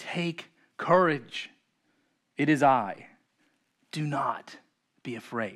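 gentle, kind, comforting voice, calm and slow. Quoting a comforting figure's words to reassure listeners, in a calm, kind voice. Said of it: "He says in a calm, kind voice".

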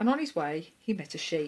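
ordinary delivery

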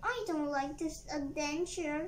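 ordinary delivery

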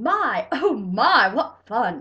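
booming, very loud, very slow, drawn-out gleeful yell. Reading a story, a dentist pulls the narrator's teeth one by one, yelling. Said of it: "and yelling".

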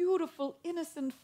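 ordinary delivery, nothing marked

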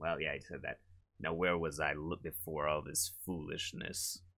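low character voice. Performing a character's line in a voiced scene, in a deep-timbre voice. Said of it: "the deep timber voice I want for him. I got it at the end there".

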